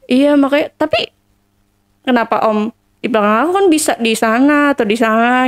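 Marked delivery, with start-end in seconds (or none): none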